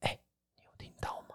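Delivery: breathy whisper, all air, very hushed. Retelling asking a companion whether he heard the noise: imitating own whisper. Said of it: "然后我用气音问他".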